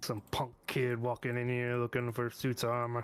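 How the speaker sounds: grizzled dwarf character voice. Voicing the dwarf behind the counter as a customer asks for armor: grizzled dwarf voice. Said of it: "grizzled dwarf standing behind the counter".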